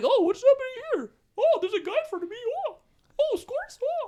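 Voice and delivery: very high, squeaky, mocking tiny cartoon-mouse voice. Mocking a defender who leaves a scorer open: mocking Darnell Nurse, Mickey Mouse-like. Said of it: "Why sound like Mickey Mouse?".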